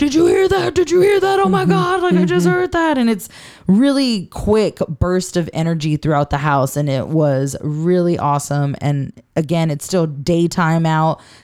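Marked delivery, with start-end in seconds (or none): 0.0-3.0 acting freaked out, mock panic, much higher pitch. Speaker retelling investigators' reactions in a house, imitating freaked-out people. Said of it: "they keep getting freaked out".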